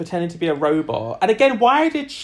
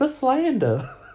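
said high, as a side aside; 8 semitones higher than usual. Retelling a reaction from the show: Heidi impression. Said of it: "That's a really good Heidi impression".

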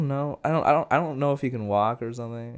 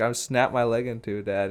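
ordinary talk

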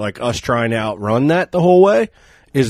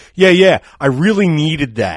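mock-sarcastic delivery, pitched higher; 5 semitones higher than usual. Retelling Kevin's reply after being thanked for coming, imitating Kevin's sarcasm. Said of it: "The most sarcastic I've ever seen Kevin".

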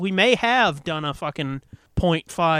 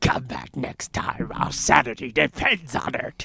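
forceful, aggressive put-on voice, low; 5 semitones lower than usual. Redoing the show's goodbye at a co-host's request, aggressive put-on voice. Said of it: "That was way more aggressive than the first voice".

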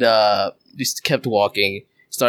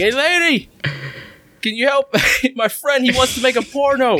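put-on, very high, drunken holler; 13 semitones higher than usual. Retelling yelling at a lady walking ahead: imitating own drunken yelling. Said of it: "but I yelled from".

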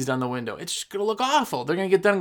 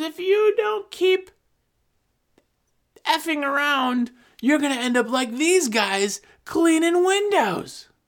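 mock very high, slow, drawn-out yelling; 10 semitones higher than usual. Retelling how a woman yelled at her teenage daughter, imitating a woman screaming. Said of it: "this lady is just screaming at her like teenage daughter".

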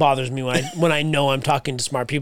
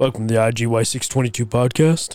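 fake seductive voice; 3 semitones lower than usual. Asked for an impression of Sarge, doing the podcast welcome: Sarge impression, sexy voice. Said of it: "you gotta get that sexy voice".

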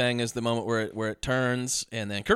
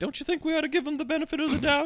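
very high, fast cartoon-goose voice. Retelling a movie scene, speaker voices the wife: Madeline Stowe as cartoon goose. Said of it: "How does she sound like a cartoon goose?".

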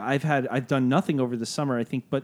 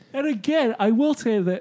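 very high, stretched words pushed through a yawn; 10 semitones higher, 4 dB louder than usual. Chatting in a group conversation, talking while yawning. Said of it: "sorry, I'm yawning".

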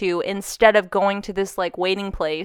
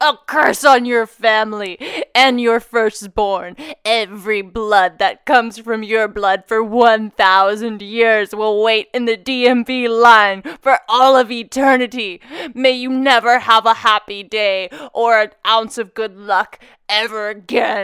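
possessed-sounding voice; 4 dB louder than usual. The speaker acts out cursing someone: impression of being possessed. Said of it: "trying to do an impression of being possessed".

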